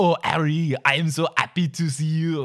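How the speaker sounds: put-on obnoxious, dramatic French accent. Showing how a character's line to Harry sounds when she reads it, obnoxious dramatic French accent. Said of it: "dramatic French accent where she's like".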